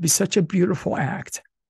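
moved, emotion welling up. Praising the other speaker's book as a gift for someone grieving, getting emotional. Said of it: "I'm going to get emotional, I'm sorry".

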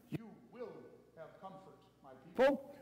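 quiet, firm, commanding tone. Showing one way to read a line aloud, commanding. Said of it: "You can read it as a command".

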